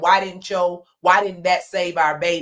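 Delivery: plain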